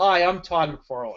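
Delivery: put-on Canadian accent. Imitating the Spawn creator introducing himself: Todd McFarlane impression, Canadian accent. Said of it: "he has that accent".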